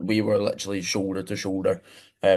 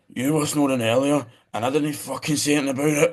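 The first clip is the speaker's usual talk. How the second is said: mock high-pitched shout, sleepy; 6 semitones higher than usual. Telling how a snoring man shouted back in his sleep: retelling a shout. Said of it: "he shouted at me".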